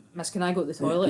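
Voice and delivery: ordinary talk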